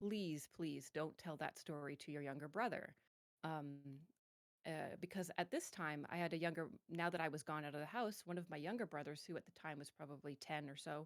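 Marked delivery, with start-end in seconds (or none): 0.0-2.9 deep, low-pitched voice. Retelling what the mom said after hearing the story, in a really low voice. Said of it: "she says it in a really low voice".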